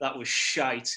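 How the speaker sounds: ordinary talk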